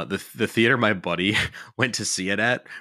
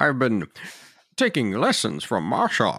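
swooping sing-song character voice, pitch swinging widely. Joking about a football field scene, quoting lines as Bane: Bane voice. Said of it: "Bane with Marshawn Lynch quotes".

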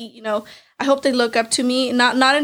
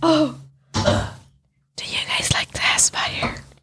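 put-on creepy voice, pitched much higher; 5 semitones higher than usual. Speaker, who likes doing creepy voices, asks the others: creepy voice. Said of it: "she likes doing creepy voices".

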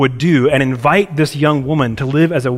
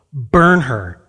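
ordinary talk

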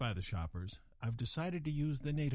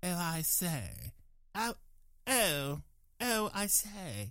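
terrible British accent, very slow and drawn out; 4 semitones higher than usual. Speaker shows which accents to use, then does a bad British accent. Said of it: "use a British accent".

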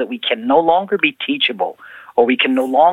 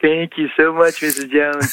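put-on smug, self-satisfied, gloating tone. Retelling a childhood thank-you at church: imitating own past gloating. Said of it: "And I'd be there gloating like".

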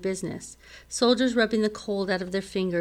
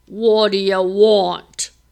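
booming, loud growl with "want" drawn out; 10 dB louder than usual. Narrator reading a giant guard's answer at the door, growling. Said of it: "He growled".

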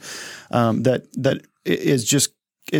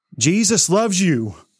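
angry, harsh voice, pitched up; 5 semitones higher than usual. Criticizing how some people share the gospel, speaker demonstrates it in an angry voice. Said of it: "in an angry voice".

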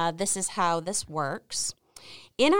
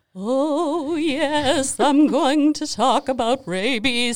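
slow, raised spooky voice, oh drawn out; 5 semitones higher, 4 dB louder than usual. Asked by the interviewer to tell more, guest answers in an attempted scary voice. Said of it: "This is my scary voice or attempt of a scary voice".

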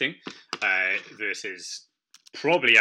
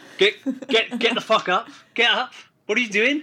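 shrill shouting, pitched very high; 13 semitones higher, 4 dB louder than usual. Retelling the coach's reaction to a full body cramp: imitating a coach shouting. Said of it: "basically shouting at me".

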